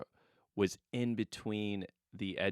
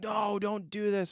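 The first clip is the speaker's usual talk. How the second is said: very high, very slow, drawn-out raised voice; 12 semitones higher, 3 dB louder than usual. Retelling warning a child who was about to grab something: retelling a raised voice. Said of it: "raised my voice".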